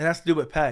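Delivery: ordinary delivery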